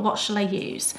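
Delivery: ordinary talk, nothing marked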